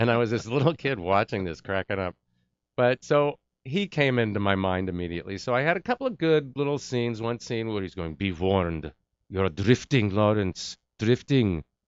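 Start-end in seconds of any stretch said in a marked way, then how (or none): 8.2-11.6 put-on Middle Eastern accent. Retelling a line from a film scene he watched as a kid, Middle Eastern accent. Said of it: "That's a Middle Eastern accent if I ever heard one".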